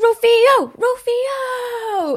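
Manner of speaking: very high, stretched-out, drawn-out shouted yell. Describing a bearded bystander near a police officer, imitating him yelling. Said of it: "he's yelling and carrying on going".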